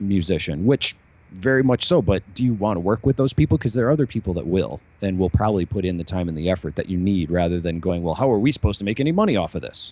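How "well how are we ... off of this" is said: skeptical, doubting, unconvinced tone. Retelling what doubtful collaborators say: imitating a skeptical collaborator. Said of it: "that was my imitation of whoever it is".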